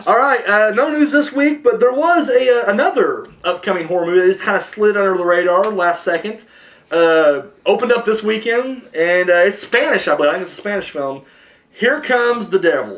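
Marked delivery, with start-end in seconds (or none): 11.7-13.0 country drawl on devil. Announcing an upcoming horror film's title, with a redneck accent. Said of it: "I said devil like a redneck there".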